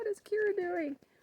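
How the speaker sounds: high-pitched, puzzled put-on dog voice. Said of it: "They're like".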